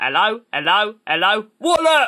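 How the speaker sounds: put-on old-fashioned advert voice. Showing what Bob Hoskins would sound like: Bob Hoskins impression. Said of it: "if you want to hear what Bob Hoskins would be like".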